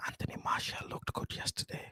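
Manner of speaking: hushed, very quiet, barely voiced whisper. Admitting something so it isn't said too loud, whispered. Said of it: "I'm gonna whisper this. I'm not gonna say it too loud".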